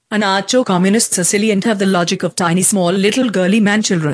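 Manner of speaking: put-on Indian accent, woman's voice. Reading out a joke statement for the show, in a put-on indian woman's voice. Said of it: "has to be in the Indian woman's voice".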